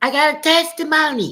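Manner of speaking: put-on tiny, very high little baby-talk voice. Telling a story, quoting a man speaking up in church, in a little baby voice. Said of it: "Try to sound like a little baby".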